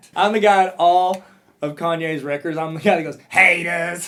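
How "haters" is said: gruff put-on cartoon villain voice, louder. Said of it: "this gruff, like, Gargamel-like voice".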